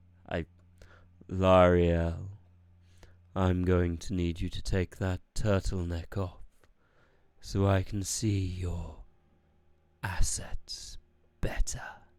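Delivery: velvet-smooth, dark, seductive vampire voice. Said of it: "the vampire voice, dark and seductive as velvet".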